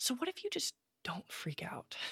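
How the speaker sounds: hushed, very soft, tender and gentle voice. Quoting what her therapist always says to her: mimicking a gentle tone. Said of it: "she says this so gently".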